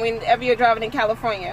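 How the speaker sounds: slightly too fast, quick, rushed speech.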